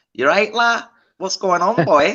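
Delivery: put-on Liverpool Scouse accent. Explaining how they do accents, demonstrating a Scouse accent. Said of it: "when I do an accent".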